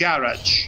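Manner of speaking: garage with the first syllable, first a, stressed. Discussing different ways people pronounce garage, stress on first syllable of garage. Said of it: "put the accent on the on the first A".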